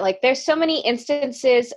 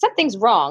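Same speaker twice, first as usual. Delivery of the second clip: ordinary talk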